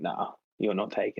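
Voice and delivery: put-on aggressive drunken voice. Retelling facing people who grab a wallet: retelling own aggro drunk words. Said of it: "I do get pretty aggro when I'm drunk".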